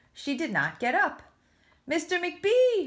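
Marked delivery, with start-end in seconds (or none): 1.9-2.9 calling out, pitched very high. Unable to get up, she is calling out after a minute. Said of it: "she called after a minute".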